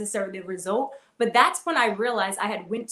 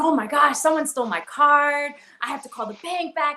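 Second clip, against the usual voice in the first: put-on frantic, alarmed, freaking-out grandmother voice; 6 semitones higher, 3 dB louder than usual. Telling how grandma thought someone stole her card, imitating grandma freaking out. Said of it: "And she's like freaking out".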